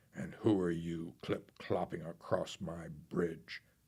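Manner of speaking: growling troll voice. Narrator reading a fairy tale, the troll challenging a goat on his bridge: growling troll voice. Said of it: "growled the Troll".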